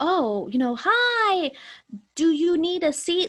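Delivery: slow, loud overarticulated talk.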